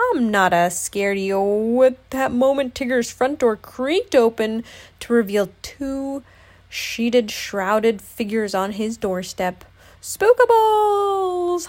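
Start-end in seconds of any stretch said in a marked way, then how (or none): 10.0-11.7 very high, shrill, loud, terrified holler. Tigger sees two sheeted figures on his doorstep, frightened holler. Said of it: "hollered Tigger".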